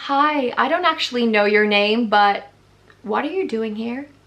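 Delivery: badly done put-on American accent, slow. Retelling what a manager said to you at the store, in a bad american accent. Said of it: "I'll do her accent".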